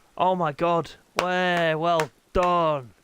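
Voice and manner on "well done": fed-up, dry sarcastic tone. Reacting after no one gets kicked out of the race: sarcastic. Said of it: "that's sarcastic".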